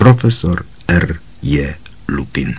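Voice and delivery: ordinary delivery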